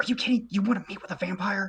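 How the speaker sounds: hurried whisper. Voicing a character pulling a friend aside: hurried whisper. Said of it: "whispers very de-, like, very hurriedly at him".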